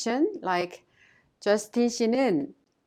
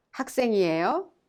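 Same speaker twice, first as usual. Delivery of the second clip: rising pitch at the end of 학생이에요. Korean lesson on questions without a question word: rising pitch at end of 학생이에요. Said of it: "you must raise the tone at the end of the sentence to make it sound like a question".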